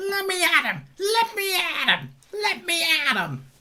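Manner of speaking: very high, slow, yappy little dog voice. Telling someone he was like a little dog, in Scrappy-Doo little dog voice. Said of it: "that little dog going".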